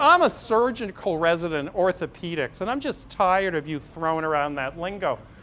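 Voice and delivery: put-on high-pitched, cocky young man voice.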